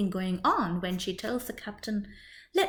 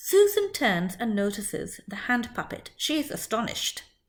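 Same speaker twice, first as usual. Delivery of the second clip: ordinary delivery, nothing marked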